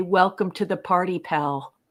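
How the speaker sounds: normal talking voice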